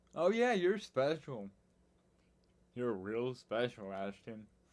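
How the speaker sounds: heavy sarcasm, swooping and sing-song. Explaining being called special, imitating someone saying it with sarcasm. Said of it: "in a sarcastic way".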